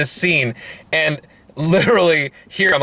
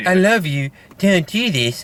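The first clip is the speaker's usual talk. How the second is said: put-on cartoon character voice; 3 semitones higher than usual. Retelling a movie scene, quoting the demon posing as the mom: sounding like Cartman. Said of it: "you make it sound like Cartman".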